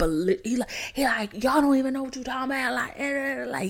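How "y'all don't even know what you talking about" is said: mock furious, angry shouted outburst. Retelling how a worker reacted when told to leave: imitating someone yelling angrily. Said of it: "yelling, yelling".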